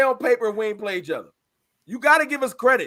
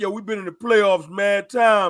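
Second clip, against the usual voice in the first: mocking, put-on boastful voice, lower pitched; 4 semitones lower than usual. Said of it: "I hear y'all drop that".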